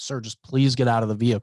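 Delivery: put-on pleading voice. Retelling a police stop video, quoting the younger officer: imitating someone pleading. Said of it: "he starts pleading with the guy".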